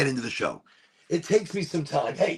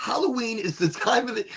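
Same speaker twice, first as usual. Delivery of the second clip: voice breaking mid-phrase, cracking and pitched up; 6 semitones higher than usual. Opening tonight's talk on halloween energies, voice cracking. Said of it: "my voice is cracking".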